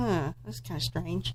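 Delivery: puzzled quiet murmur.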